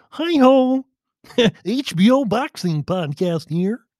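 high, slow frog-puppet voice. Describing how a boxing podcast host talked: Eric Raskin impression, Kermit-like. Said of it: "Eric Raskin talked like Kermit the Frog".

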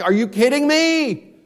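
high, screamed, out-of-control outburst. Retelling reading sermons he disliked, imitating his own screaming. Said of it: "I'm screaming at this lady".

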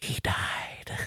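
hushed, secretive, barely voiced whisper. Retelling a young girl telling her mother something: imitating a whisper. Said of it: "as she told Kathy in a whisper".

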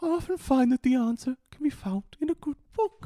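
very high-pitched cartoon storybook bear voice. Voicing a pet owl in a group story, in a Winnie the Pooh voice. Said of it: "Got a Winnie the Pooh voice".

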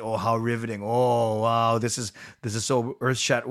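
put-on, mock-sarcastic tone. Imitating how people react sarcastically to a speaker, mock-sarcastic reaction. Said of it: "People are being sarcastic".

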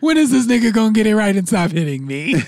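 high, sing-song tone. Teasing another speaker by acting out the girl dating the toxic dude: imitating girl dating toxic dude. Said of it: "you sound like the girl who's dating the toxic dude".

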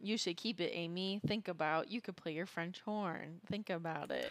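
slow, weird, robotic put-on voice. Recapping a show scene, imitating Ashley's weird robot voice. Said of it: "speaking in this weird robot voice".

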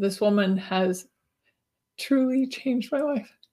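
emotional, choked up, on the verge of tears. Introducing your guest on your show, emotional, near tears. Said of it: "You're going to make me cry".

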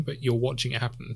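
ordinary talk

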